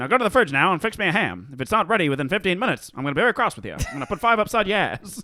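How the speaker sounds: put-on rapid old-timey talk with upward-lilting line endings. Demonstrating a favorite new way of talking, talking fast and upwards. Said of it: "you just talk really fast and upwards".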